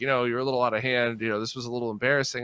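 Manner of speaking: ordinary delivery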